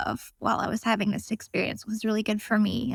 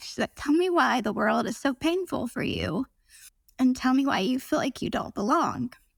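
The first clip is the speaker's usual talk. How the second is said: words catching on held-back tears, choked up; 3 semitones higher than usual. Recounting what a woman asked the speaker, about to cry. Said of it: "I'm sorry, I'm gonna cry".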